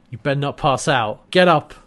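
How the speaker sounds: ordinary delivery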